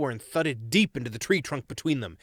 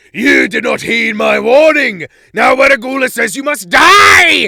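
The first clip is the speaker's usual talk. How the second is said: wild, booming mad howl, very loud, high, shrill; 10 semitones higher, 15 dB louder than usual. A wild figure attacks from the clearing: mad, booming angry howl. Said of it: "a mad, booming voice howled angrily".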